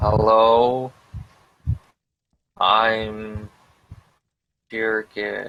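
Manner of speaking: slow, over-careful, over-enunciated speech, I'm drawn out. Voicing a character who greets a creature: loud and slow, as if to a deaf person. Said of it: "kind of a bit loud and a bit slow".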